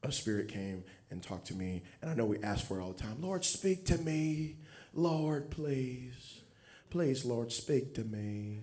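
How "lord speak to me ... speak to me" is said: put-on very slow Louisiana old-lady drawl, southern accent. Acting out asking the lord to speak, in a southern old-lady voice. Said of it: "You see how my southern thing kind of came out?".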